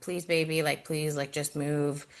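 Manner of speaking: whispered. Retelling a plea to the baby during an ultrasound: retelling a whispered plea.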